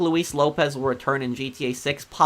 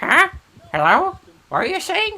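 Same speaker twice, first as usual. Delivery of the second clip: put-on very high, wildly sing-song, swooping elderly voice; 5 dB louder than usual. Recreating a voice used while trolling a scammer, old person's voice. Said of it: "That's when I did the old person's voice".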